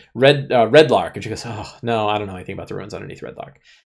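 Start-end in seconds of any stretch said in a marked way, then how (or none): 1.5-3.6 mock-nervous voice, quieter. Retelling how a woman denied knowing about some ruins, acting nervous. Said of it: "And she got real nervous".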